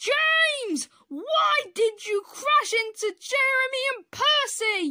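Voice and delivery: very high, furious, booming bellowing shout. Reading a train story, the tall controller questions James after a crash, bellowing. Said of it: "he bellowed".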